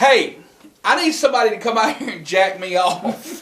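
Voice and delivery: mock boisterous announcer voice, loud and high. Retell her proclamation on walking into a service station, imitating Aunt Mel's loud, boisterous voice. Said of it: "she proclaims in a loud, boisterous voice".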